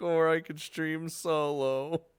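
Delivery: put-on mopey, dejected, slow, drawn-out trailing voice. Repeating someone's earlier line back to them: imitating someone sounding sad. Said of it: "You sounded sad at the end there when you're like".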